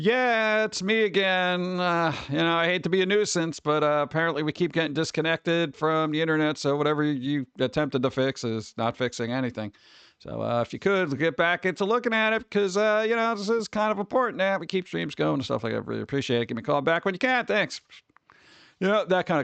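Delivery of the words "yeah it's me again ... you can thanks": normal talking voice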